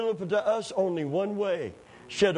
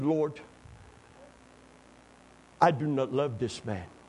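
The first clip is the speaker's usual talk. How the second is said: put-on broken Dutch accent, lower pitch; 5 semitones lower than usual. Retelling a woman's honest prayer to the Lord, broken Dutch accent. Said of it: "She prayed in her Dutch broken accent".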